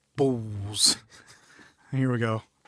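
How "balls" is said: put-on single word said in a British accent. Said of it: "The way he says".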